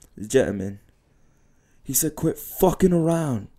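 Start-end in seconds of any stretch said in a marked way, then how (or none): 2.2-3.4 put-on high, slow British gangster accent. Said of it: "imitating what they were saying in the accent".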